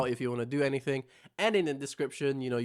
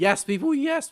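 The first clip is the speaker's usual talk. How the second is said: very high voice breaking and cracking; 13 semitones higher, 6 dB louder than usual. Sick speaker addressing people after issuing a dare, voice cracking. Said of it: "My voice cracked".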